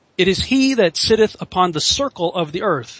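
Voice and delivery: ordinary talk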